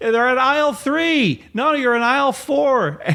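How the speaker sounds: very high-pitched yelling. Retelling how the girls yelled at a man in the aisle, retelling the girls' yelling. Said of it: "the girls are yelling at him".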